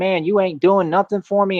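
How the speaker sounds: put-on heated rant, temper snapping, losing it. Retelling words said to God while losing it: imitating own angry outburst. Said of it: "I start losing it and saying".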